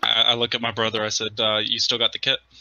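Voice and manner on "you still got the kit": ordinary talk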